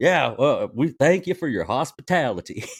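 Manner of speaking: loud, high, caricatured put-on American accent. Imitating the american cousin from the movie: imitating an american accent. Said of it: "how do we make sure we know he's American?".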